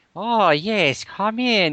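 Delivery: put-on sinister, vaguely German accent, drawn out. Imitating the hotel doorman who answers the door: evil, slightly german accent. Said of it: "he has some evil accent, maybe something slightly German".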